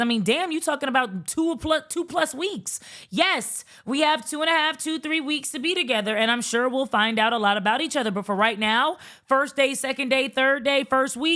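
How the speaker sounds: normal talking voice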